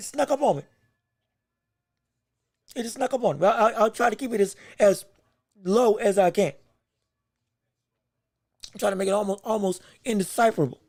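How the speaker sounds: speech broken by hiccups. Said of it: "I have the hiccups".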